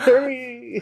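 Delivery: very high, whiny, impatient dog voice.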